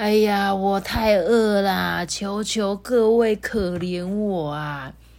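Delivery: put-on slurred, mumbled, indistinct old beggar woman voice. A storyteller voices a hungry old beggar woman: slurred old beggar woman. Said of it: "边口齿不清的说".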